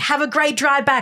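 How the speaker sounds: mock, falsely friendly tone thick with sarcasm. Retelling what the group told the uninvited woman as she left: retelling a sarcastic send-off. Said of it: "like really sarcastically".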